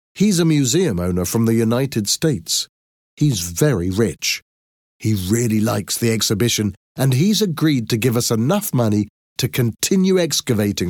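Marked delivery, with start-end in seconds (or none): none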